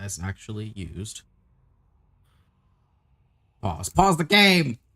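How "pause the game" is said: loud, high-pitched, genuine panic. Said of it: "Legitimate panic".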